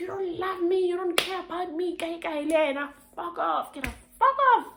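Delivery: very high, shrill, put-on furious yelling. Showing the audience what being toxic looks like, mock shouting. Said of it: "I'm shouting".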